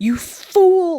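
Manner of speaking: acted-out livid fury, very high-pitched and loud. Retelling a story where a man changes back to human form; acting out furious Caspin. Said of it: "he is pissed the fuck off".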